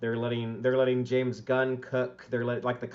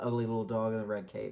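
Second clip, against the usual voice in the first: put-on muttered villain voice, quieter; 2 semitones lower, 5 dB quieter than usual. Picturing a villain sipping from a coffee mug: muttering under breath like Lex. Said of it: "saying under his breath".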